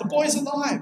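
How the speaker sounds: yelling in mock voice. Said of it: "he yells out".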